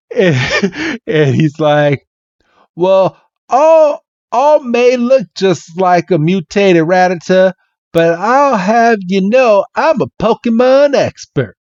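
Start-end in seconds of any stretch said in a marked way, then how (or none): 2.7-11.4 put-on Southern US accent, higher pitch. Retelling a Pokémon story, voicing a character's reply to Bill in a southern accent. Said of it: "I'm going to try my best to do this southern accent".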